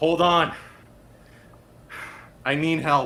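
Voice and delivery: calling out loudly.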